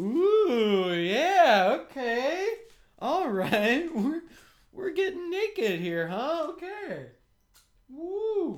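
eager, very high, loud, drawn-out character voice. Acting out a banana being peeled, all game: eager banana voice. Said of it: "The banana's all game".

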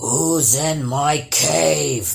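drawn-out, cavernous growled troll voice. Narrator reading a story, the troll confronting someone in its cave, growling troll. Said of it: "growled the troll".

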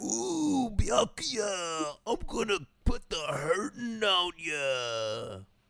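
very slow, swooping drawl with "ya" stretched. Imagining the character's dub done in a Macho Man Randy Savage voice. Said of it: "his dub is not just Macho Man Randy Savage".

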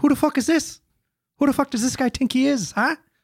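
very high-pitched put-on Irish brogue. Streaming with others who comment on the accent, speaking in an Irish accent. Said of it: "That's Colin Farrell".

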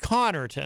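Connarton with heavy stress on first syllable Con. Explaining that a double N draws the stress: stress on Con in Connarton. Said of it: "You would put the emphasis on the C-O-N-N".

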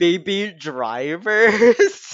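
put-on each word of Baby Drivers punched hard. Imitating Christina's closing line: imitating Christina stressing BABY DRIVERS. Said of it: "Christina goes".

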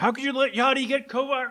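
mock, very high-pitched yell. Speaker imagines putting a question to him: mock yelling at him. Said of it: "I'm just start yelling at him".

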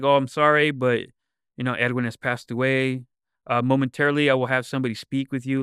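low, calm, level, steady doctor voice. Retelling how a doctor came out to speak to a family, imitating a low, calm voice. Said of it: "it's very, like, low and calm".

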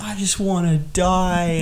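put-on high wailing sobbing scream, "die" dragged out. Describing a film scene where the mother cries on the floor: retelling a crying scream. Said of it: "she's crying on the floor, and she's like screaming".

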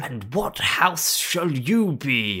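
high-pitched, very slow, deliberate delivery. Retelling a scene, voicing the Sorting Hat. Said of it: "sorting hat's like".

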